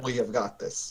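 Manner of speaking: deep, flat, level, featureless overlaid monotone. Answering in character during a game: much deeper, more monotone voice. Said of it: "a much deeper, more monotone voice".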